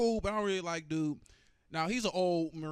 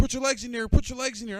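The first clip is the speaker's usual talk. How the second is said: screamed, very loud and high; 8 semitones higher, 9 dB louder than usual. Recounting the jump, speaker retells the man screaming at him mid-fall, retelling a scream. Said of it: "He's screaming at me".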